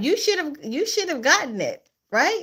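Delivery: switched-up, high, wide-ranging teasing singsong.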